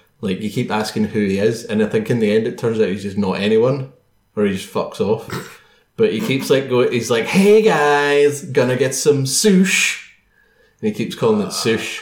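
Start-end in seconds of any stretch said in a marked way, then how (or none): 7.2-10.1 very slow, pitched-up Californian millennial drawl. Quoting an annoying man from a story, in a Californian millennial voice. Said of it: "That just sounds like a Californian millennial".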